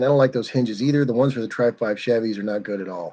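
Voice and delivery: ordinary talk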